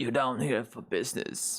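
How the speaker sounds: put-on grumpy old man character voice. Voicing a tattooed character who greets the visitors, in a grumpy old man voice. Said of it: "this this this man's old grumpy voice".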